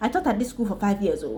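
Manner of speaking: put-on strong, heavy Nigerian accent. Describing how others phrase a sentence, speaker quotes them in a thick Nigerian accent. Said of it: "They speak with a thick Nigerian accent".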